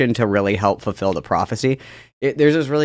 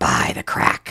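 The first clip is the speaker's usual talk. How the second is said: acted, hushed whisper; 7 semitones lower than usual. Imagining a cursed medallion talking to him: put-on whisper. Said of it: "it would whisper to me".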